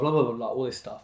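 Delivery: ordinary talk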